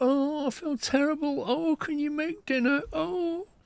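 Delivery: high sickly whine. Imitating his partner complaining on the sofa after vaccine jabs: imitating someone complaining feeling ill. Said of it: "So she's like".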